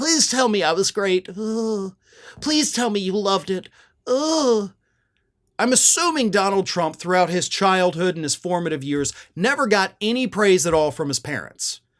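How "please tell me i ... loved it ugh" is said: put-on sniveling, whiny voice, higher pitched. Mocking a politician again begging for praise: mocking Donald Trump's sniveling whine. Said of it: "what a sniveling little weaselly thing to do".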